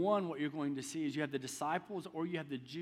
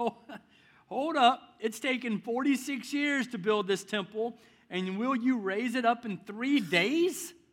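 chuckling, high-pitched scoffing disbelief; 7 semitones higher, 7 dB louder than usual. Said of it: "I can hear that chuckle underneath their voice".

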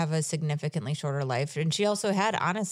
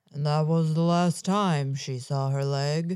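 put-on low, deep male voice. Retrying a line on request in a put-on voice: low man voice. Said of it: "I'm not as good at doing low man voices".

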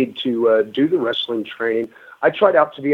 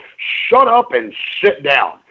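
high, slow, hard emphasis on "shut up". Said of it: "with emphasis on "shut up."".

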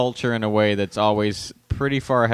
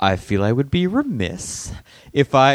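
put-on overly polite woman voice, higher pitch; 4 semitones higher than usual. Retelling an SNL sketch where a woman asks out a star: imitating Maya Rudolph being really polite. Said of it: "woman in her thirties being really polite".

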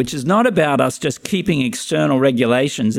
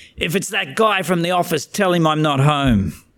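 put-on clenched-jaw yell through gritted teeth; 4 semitones higher than usual. Telling a story, acting out a father yelling from the background; retelling a yell through gritted teeth. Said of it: "yell out in the background through gritted teeth".

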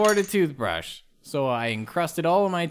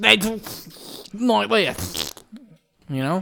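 high-pitched put-on British accent; 5 semitones higher than usual. Explaining why the Tooth Fairy is British: put-on British accent. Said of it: "'Cause that's how they talk".

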